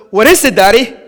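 usual speaking voice

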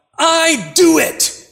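very high-pitched, very loud yelled outburst. Retelling a child yelling out in a nightmare: imitating a yell. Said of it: "she yells out".

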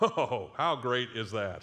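sarcastic tone. Reacting to a bible passage just read aloud: sarcastic. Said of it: "sarcasm, very much so there".

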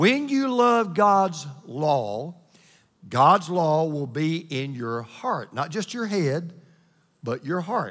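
very slow, deliberate delivery.

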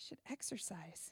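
soft, slow, breathless whisper.

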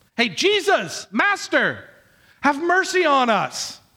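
acted, high, drawn-out, beseeching begging cry. Speaker retells the ten lepers calling out to Jesus; acting out a begging cry. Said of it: "they're crying out to him".

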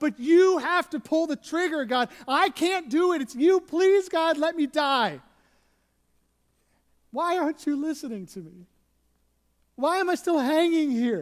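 mock desperate yelling. Retelling how Job begs God to let him die: Job yelling up to God. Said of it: "he's yelling up to God".

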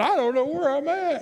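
play-acted crying with voice pitched very high, tearful. Retelling what was said to a policeman while lost: retelling words said in tears. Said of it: "in my tears".

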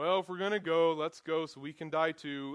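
put-on gloomy, mopey donkey voice. Paraphrasing a disciple's words to listeners, Eeyore impression. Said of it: "He sounds like Eeyore here".

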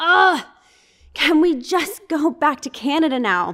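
high, long, drawn-out groaning. Telling of a long car ride, quoting her from the back of the car, retelling a groan. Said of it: "she finally just groaned at us and went".

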